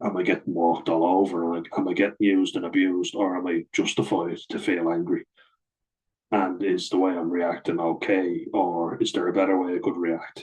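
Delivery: ordinary delivery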